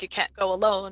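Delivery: ordinary talk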